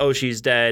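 usual speaking voice

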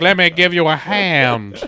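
put-on deep narrator voice. Joking about a movie cameo: Morgan Freeman impression. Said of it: "Morgan Freeman, it's like".

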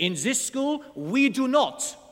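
terrible, loud, slow, fake French accent. Quoting a man at school who pushed bags off shoulders: terrible fake french accent. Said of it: "it's a terrible French cod accent".

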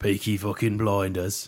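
put-on Birmingham accent. In casual banter, the speaker drops a Peaky Blinders impression. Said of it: "That's th- a pretty good impression".

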